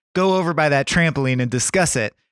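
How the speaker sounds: ordinary talk, nothing marked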